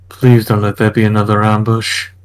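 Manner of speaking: light, quiet muttered aside. A character follows the butler up the stairs, muttering under the breath. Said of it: "saying under his breath".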